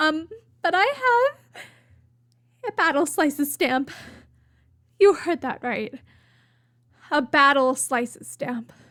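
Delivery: excited, teary, holding back joyful tears. A video host tells viewers about a new stamp, holding back happy tears. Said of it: "I'm trying not to cry from joy".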